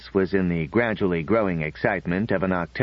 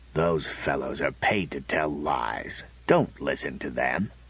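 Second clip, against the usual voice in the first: low, soft, grumbling growl; 5 semitones lower, 5 dB quieter than usual. A father answers his daughter from behind the paper, growling.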